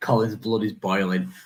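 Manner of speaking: ordinary delivery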